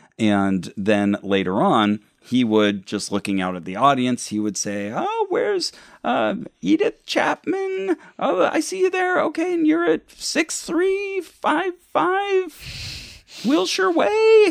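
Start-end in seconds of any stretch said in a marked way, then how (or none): 4.9-14.5 irritating, very high stage faith-healer voice. Retelling a faith healer calling out someone at a rally: imitating an annoying faith healer voice. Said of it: "he also has this really annoying voice".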